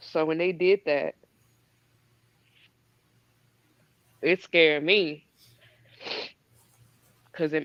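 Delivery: tearful, weeping, crying while speaking. Describing something that scared her, crying while talking. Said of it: "I'ma stop crying".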